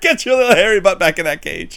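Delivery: put-on high, full, scolding hollering yell. Retelling a movie scene of yelling at a hamster over the phone: imitating Eddie Murphy yelling. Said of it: "Eddie Murphy is, like, yelling at the hamster".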